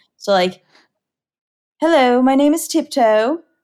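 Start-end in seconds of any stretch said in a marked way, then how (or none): 1.8-3.4 posh, classy gentleman voice. Imagining how the character Tiptoe would sound, the speaker tries his classy gentleman voice. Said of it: "very like business-esque voice. Like he'd be very classy gentleman".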